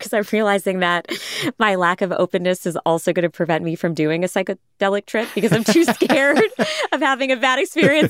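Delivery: words broken up by laughing. Responding to the other speaker about psychedelics, laughing while talking. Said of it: "Sorry, I'm laughing right now".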